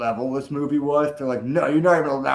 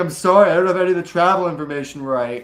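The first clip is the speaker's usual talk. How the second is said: mock crying, higher and louder; 4 semitones higher, 5 dB louder than usual. Retelling a documentary scene where the booker apologizes, imitating someone crying. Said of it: "she's like, crying, and she's like".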